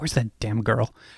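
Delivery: muttering under breath. Narrator voices a man looking around for someone, muttering under his breath. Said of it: "you hear him kind of mutter under his breath".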